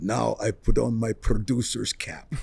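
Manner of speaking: put-on thick, heavy Turkish accent, slow pace. Recalling a producer from Turkey who would always joke, heavy Turkish accent. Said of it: "so he had this very heavy accent".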